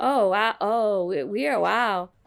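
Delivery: mock dazed, lost-the-thread tone. Retelling what gets said after losing the thread: imitating own dazed reaction. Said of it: "that's when I say things like".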